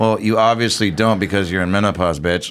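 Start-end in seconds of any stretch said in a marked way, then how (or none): none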